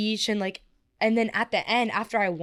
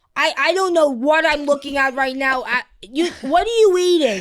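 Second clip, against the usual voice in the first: put-on heaviest New York accent, laid on thick, loud and high; 5 semitones higher, 7 dB louder than usual. Describing a New Yorker on FaceTime, quoting what she says: imitating Mimi's thick New York accent. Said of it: "imitate her accent because she's from New York".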